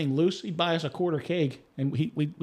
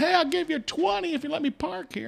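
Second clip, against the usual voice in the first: very high, raspy, rough yell; 13 semitones higher than usual. Retelling a driver in backed-up traffic asking to park: imitating someone yelling. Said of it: "somebody's yelling".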